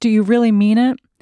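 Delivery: with a gasp. After hearing long-awaited words, the narrator replies, gasping. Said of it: "I gasped".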